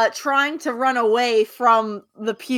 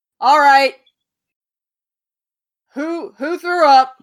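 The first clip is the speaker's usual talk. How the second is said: loud, raised call-out voice; 3 semitones higher, 5 dB louder than usual. The game narrator voices a character reacting to a player being sick, loud. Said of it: "you're gonna hear a loud".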